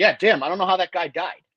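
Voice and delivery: acted-out clueless, faux-innocent, playing-dumb tone. Acting out a blood-covered killer telling police he knows nothing: feigned innocence. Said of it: "standing over a dead body to police being like".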